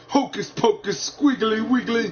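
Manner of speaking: fierce voice. Narrating the story, reading Harry's made-up spell words in a fierce voice. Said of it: "said Harry in a fierce focus, in a fierce voice".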